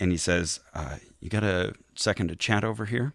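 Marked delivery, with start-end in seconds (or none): 1.2-3.1 punctuated, soft but firm put-on voice, quieter. Retelling what a man at a women's session said: soft but firm Mike Pence-like delivery. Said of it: "he sounds a lot like Mike Pence".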